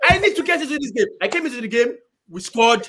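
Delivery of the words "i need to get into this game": play-acted all-out screaming shout, pitched high. Retelling waiting outside to come into the game: retelling own screaming. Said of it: "I was screaming, like".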